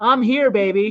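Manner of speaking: ordinary talk, nothing marked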